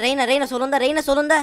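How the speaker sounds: loud high-pitched shout.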